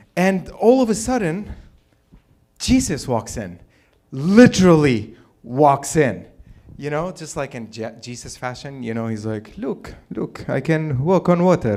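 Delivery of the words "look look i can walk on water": put-on Arabic accent, pitched higher.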